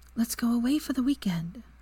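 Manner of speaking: close, hushed, high, soft whisper. Hermione, alone with Draco behind drawn curtains, whispers into his neck. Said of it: "Hermione whispered into his neck".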